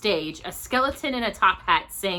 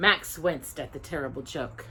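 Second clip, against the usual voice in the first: usual speaking voice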